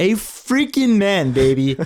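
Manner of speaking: very slow, high-pitched Midwestern guy voice. Responding after the other speaker talks about building love on rock, imitating Micaiah. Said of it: "sound like a Midwestern guy".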